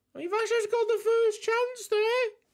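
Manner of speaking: voice jumps way up, very high-pitched. Commentating a football match as Vasas gets the first chance, high-pitched voice. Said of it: "I don't know why my voice went so high".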